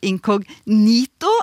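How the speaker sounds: inkognito, stress on third syllable -ni-. Explaining a widespread but nonstandard pronunciation of inkognito: stress on third syllable ni. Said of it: "med trykk på tredje stavelse, altså inkognito".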